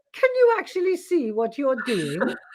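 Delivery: put-on lilting, swooping Welsh accent. Reminding the listener what they said to her at a retreat, imitating a Welsh accent. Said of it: "You said to me in your lovely Welsh accent".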